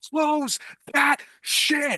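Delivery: all-out shriek at full lung, very high. A game master voices Bobby reacting to the flipped cards, Bobby screaming as loud as possible. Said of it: "just screams out like as loud as he possibly can".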